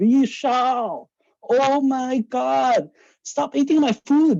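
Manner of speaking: put-on, very high, angry shout. Retelling what a woman shouted at him from downstairs, imitating her shouting. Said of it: "she'd shout down from downstairs".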